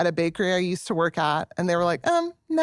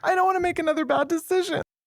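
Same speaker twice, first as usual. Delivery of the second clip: very high voice tipping into tears, starting to cry; 10 semitones higher than usual. Speaker talking with the others about a decision, suddenly starting to cry. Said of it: "Why is she suddenly starting to cry?".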